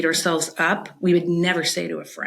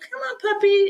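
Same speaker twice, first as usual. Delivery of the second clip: high, gentle, coaxing voice. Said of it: "gently get him back on track".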